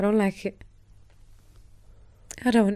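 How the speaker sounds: tearful, crying while talking. Explaining why seeing good people hurt upsets her: crying while talking. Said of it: "the reason why I'm crying".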